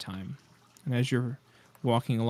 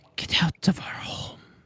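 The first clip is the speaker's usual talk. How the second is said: rasping, barely human whisper; 7 semitones higher, 4 dB louder than usual. Game master voicing a voice heard in the players' minds, raspy, non-humanoid voice. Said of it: "this raspy, almost non humanoid voice".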